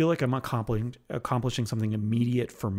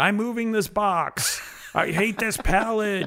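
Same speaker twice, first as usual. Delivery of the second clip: venting shout, pitched up, yelling; 10 semitones higher, 4 dB louder than usual. Retelling what gets yelled while moving boxes at work: imitating own yelling. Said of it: "I'm just yelling".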